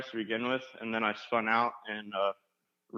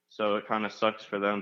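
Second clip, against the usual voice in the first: normal talking voice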